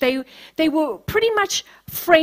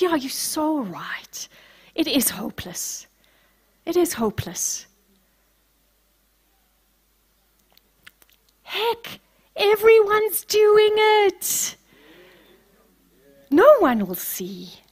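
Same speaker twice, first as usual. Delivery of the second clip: mock devil whisper, higher pitched; 4 semitones higher than usual. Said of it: "that voice".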